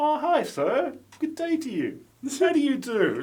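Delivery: put-on, prim, courtly, very high, sing-song politeness. Retelling how a hotel sleeper keeps greeting him: imitating a polite greeting. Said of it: "I like how polite he is".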